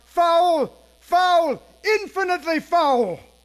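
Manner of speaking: high, loud outcry, very heavily stressed.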